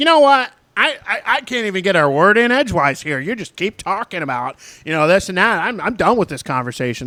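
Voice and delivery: stumbling angry rant. Retelling an argument, imitating a man who got real mad. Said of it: "Your per-, impersonations are just getting way too good".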